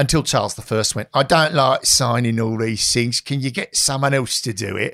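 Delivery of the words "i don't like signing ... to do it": broad put-on London Cockney accent. Telling a history anecdote about travel letters, voicing Charles I in a Cockney accent. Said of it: "Was Charles I like a Cockney?".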